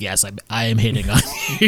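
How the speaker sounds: very matter-of-fact, low, plain delivery. Retelling a TV scene, imitating Cho: very matter-of-fact. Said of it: "very matter of fact".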